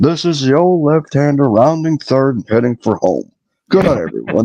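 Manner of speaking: folksy radio play-by-play announcer voice. Answering a remark about a baseball announcer: Joe Nuxhall impression. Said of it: "a poor man's Harry Carey".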